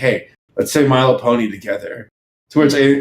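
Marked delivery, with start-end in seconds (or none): 0.0-2.1 put-on hushed whisper. Recalling what someone whispered to him in the audience question line: retelling a whisper. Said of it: "Paley whispers to me like".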